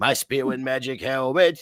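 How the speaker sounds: old-school animated cartoon character voice. Retelling a cartoon scene, quoting the armored hunter: Elmer Fudd voice. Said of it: "And he's like".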